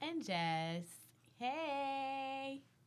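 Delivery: sweet, cheerful, cute, high voice with stretched hey. Co-host joining the radio show's opening introductions: cute, happy greeting. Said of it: "that was mad cute, mad happy".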